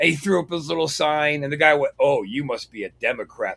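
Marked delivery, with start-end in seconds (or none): 2.0-3.6 affronted, taking offense. Retelling what the guy said about the hat: imitating an offended tone. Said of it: "all offended like".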